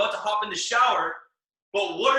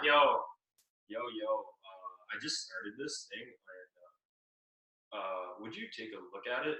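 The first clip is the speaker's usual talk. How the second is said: very low, hushed, dead-flat monotone drone; 12 semitones lower, 12 dB quieter than usual. Speaker showing how not to sound when calling someone: monotone delivery. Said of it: "if you are monotone and like".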